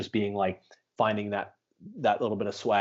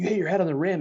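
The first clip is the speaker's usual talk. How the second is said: put-on scream, higher and louder; 9 semitones higher, 4 dB louder than usual. Retelling players leaving the gym after the jump: imitating guys screaming.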